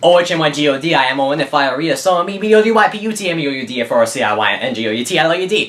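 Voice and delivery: spelling out letters very fast. Showing another speaker how fast letters can be spelled out: spelling out letters very fast. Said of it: "I can say that pretty fast".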